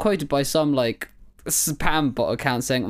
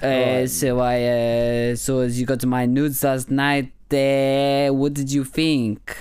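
put-on French accent, slow, with words drawn out. Acting out an awkward workplace scene as a professor: French accent. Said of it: "I'm going to be a French professor".

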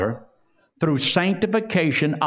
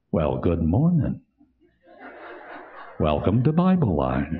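very low, sweet and mellow voice; 12 semitones lower than usual. Imitating Hank greeting listeners: imitating Hank's soft, sweet voice. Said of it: "mellow, wonderful voice".

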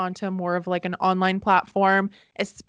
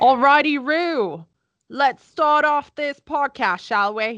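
fake, vague, hard-to-place Australian accent; 6 semitones higher, 5 dB louder than usual. Opening the podcast: vague Australian-British put-on accent. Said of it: "I don't know what accent that was".

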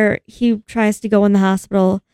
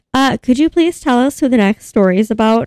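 put-on frantic, freaking-out, over-polite pleading; 2 semitones higher than usual. Retelling a movie scene, quoting a character asking a cop: imitating someone freaking out. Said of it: "she's, like, freaking out".

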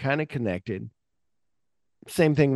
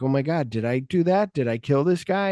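ordinary talk, nothing marked

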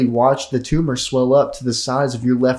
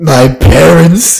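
put-on lisp, much louder and pitched higher; 4 semitones higher, 12 dB louder than usual. Describing a clip they watched, the speaker quotes Batman with a lisp. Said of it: "he had like a lisp".

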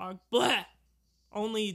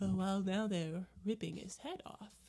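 soft, unruffled public-radio announcer delivery; 5 dB quieter than usual. Asked what they want the other to do, speaker answers in an NPR radio voice. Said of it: "Like NPR".

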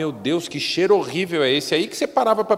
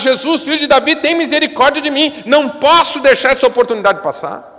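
pitched-up shout, crying out; 9 semitones higher, 8 dB louder than usual. Retelling a blind man crying out to Jesus: imitating a blind man shouting. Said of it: "e começou a gritar".

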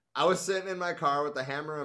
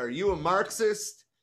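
put-on loud, forceful, demanding, raised voice; 5 semitones higher, 5 dB louder than usual. Reading a story aloud, voicing the pig questioning Huey, loud demanding voice. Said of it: "in a very loud, demanding voice".

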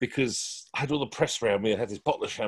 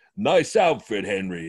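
loud, big put-on American accent; 5 dB louder than usual. Retelling how a tall american man greeted henry, big american voice. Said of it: "this big American voice went".

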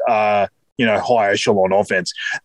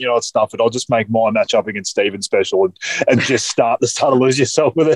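ordinary talk, nothing marked

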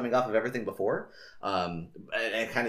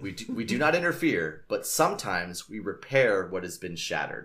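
usual speaking voice

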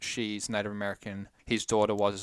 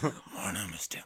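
mocking put-on robot villain voice, quieter; 7 dB quieter than usual. Mocking the cohost's introduction: imitating Dylan's Megatron voice. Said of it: "It's you".

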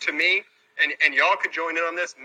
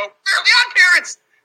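very loud, shrill, high cartoon-teacher yell; 8 dB louder than usual. Speaker telling listeners who someone sounds like, doing a Mr. Crocker impression. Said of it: "He sounds like the teacher, Mr. Crocker, when he would go".

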